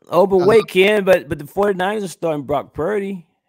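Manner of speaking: very high, loud, sarcastic tone. Arguing a Twitter take about starting the backup quarterback: sarcastic. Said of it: "I'm being sarcastic".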